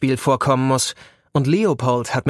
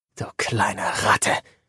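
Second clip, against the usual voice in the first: murmured, barely voiced, muttered under the breath; 4 semitones lower, 4 dB quieter than usual. The narrator answering Leo's retort about polo, muttered. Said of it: "murmle ich".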